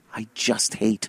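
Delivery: soft, low, muttered grumble. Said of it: "I'm just mumbling to myself".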